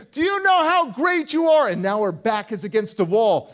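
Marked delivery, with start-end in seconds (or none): 0.2-1.7 very high-pitched, loud shriek. Speaker retells a woman backing up to the wall as he approaches, imitating her screaming. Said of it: "she's screaming".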